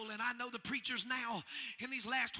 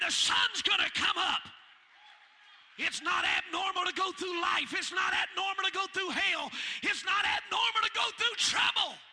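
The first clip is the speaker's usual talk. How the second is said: very loud, high, screaming preacher-style delivery; 7 semitones higher, 9 dB louder than usual. A preacher preaching to listeners; screaming. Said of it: "I know I'm screaming a little bit".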